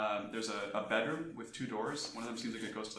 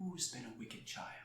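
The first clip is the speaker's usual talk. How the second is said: mother-like voice; 3 semitones higher, 7 dB quieter than usual. Storyteller voicing a doll that speaks when a player picks it up, motherly doll voice. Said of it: "you hear a motherly voice say from the doll itself".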